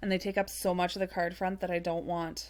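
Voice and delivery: ordinary talk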